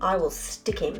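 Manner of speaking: plain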